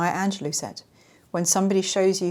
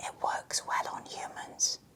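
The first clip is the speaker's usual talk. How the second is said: hushed, very quiet, secretive whisper. Speaker explaining how covert narcissists play the victim, whispering. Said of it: "I'm whispering that".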